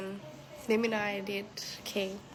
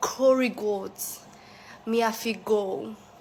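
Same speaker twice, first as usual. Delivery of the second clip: fake Jamaican accent, louder; 7 dB louder than usual. Talking about going to get Jamaican food, in a put-on Jamaican accent. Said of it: "Me a have a Jamaican accent".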